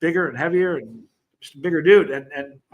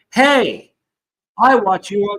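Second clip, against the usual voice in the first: put-on Spanish accent, higher and louder; 5 semitones higher, 6 dB louder than usual. Retelling a stranger who recognized the speaker: imitating a Spanish accent. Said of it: "she said it with a Spanish".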